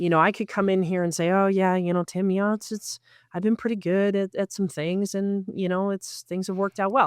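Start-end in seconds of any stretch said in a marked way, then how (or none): 1.3-7.1 delivery lacking confidence. Speaker showing Tim how she could come across, not sounding confident. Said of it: "that doesn't sound very confident".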